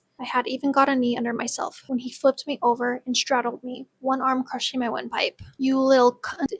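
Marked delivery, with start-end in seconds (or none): 5.6-6.5 snarled, angry voice. Narrator reading an attacker's line as he pins the narrator down, snarling. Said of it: "he snarled".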